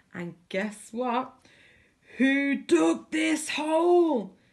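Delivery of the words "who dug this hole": high bellowing pirate captain voice, "hole" drawn out. Narrator reading a pirate captain's line after he falls into a hole, bellowing. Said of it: "he bellowed".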